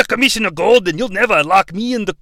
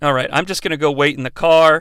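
normal talking voice

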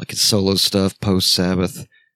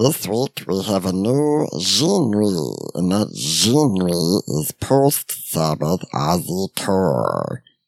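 weird, silly put-on voice with swooping pitch. Announcing a made-up genre for the episode: weird goofy voice. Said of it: "sorry, that's a weird voice".

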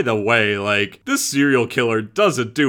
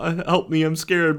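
high, crying, pleading creepy creature voice; 6 semitones higher, 3 dB quieter than usual. Describing a horror scene with a creature facing the wall: imitating a crying creature. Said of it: "and it's crying. He has an oral voice".

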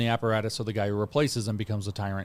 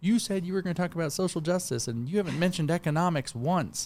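acted-out, pitched-up shouted yell; 7 semitones higher than usual. Retelling what an old woman yelled at a public talk: imitating someone yelling. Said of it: "an old woman stood up in the middle and yelled at me".

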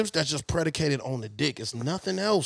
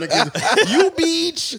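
very high, loud, put-on Nepalese accent; 9 semitones higher, 6 dB louder than usual. Showing the others his Nepalese accent, a mock Nepalese accent. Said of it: "That's my Nepalese accent".

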